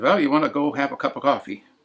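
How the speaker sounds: mild, Swedish-tinged everyday speech. Quoting a mother or aunt who were Swedes, in a Swedish accent. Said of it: "they would say in their sort of Swedish accent".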